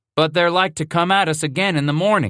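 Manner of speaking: complaining grumble. A narrator reads a man's words to men clustered in a corral, grumbling. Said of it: "Bass grumbled".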